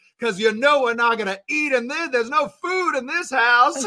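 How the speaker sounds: put-on vampire voice. Showing the family's in-joke voice, asking about lunch: Bill Compton-style family voice. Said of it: "Bill Compton vibes".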